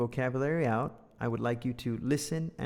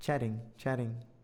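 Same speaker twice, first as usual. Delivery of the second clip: American flapped t, t sounds like d in chatting; 3 dB quieter than usual. Showing a learner how Americans say chatting quickly: American flapped T in chatting. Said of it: "in the middle between dodek and tautau".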